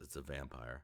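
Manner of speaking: hushed, heavy muttering under the breath. In a tabletop game, a player's character reacts to something nearby: heavily under breath. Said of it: "Heavily under my breath".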